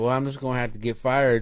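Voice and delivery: ordinary talk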